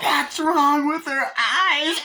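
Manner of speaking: put-on horrified girl's voice, high, slow and stretched out.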